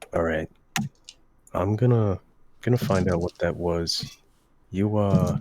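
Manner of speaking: hushed whisper. A character quietly tells Brazen and Sharky he'll investigate, whispering. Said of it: "he kind of whispers to Brazen and Sharky".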